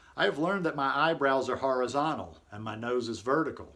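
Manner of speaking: plain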